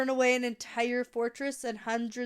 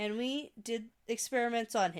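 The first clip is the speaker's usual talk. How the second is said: ordinary delivery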